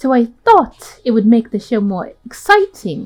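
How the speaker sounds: sudden, put-on British accent. Reading a game character's line aloud: British voice. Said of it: "Why am I doing a British voice?".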